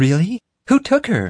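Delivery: eager, very high-pitched. Narrator reads Violet responding to Ethan before the narrator could, excited. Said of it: "Violet excitedly responded".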